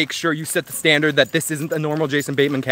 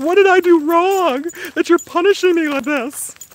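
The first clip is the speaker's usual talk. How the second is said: very high, scared, wounded little dog voice; 14 semitones higher, 4 dB louder than usual. Voicing a dog scared by the screams: voicing the scared dog. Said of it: "She's like".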